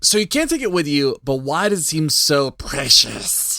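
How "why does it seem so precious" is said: slow, drawn-out creature voice. Kicking off the discussion with a question, Gollum voice. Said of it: "I got to do my Gollum voice for this".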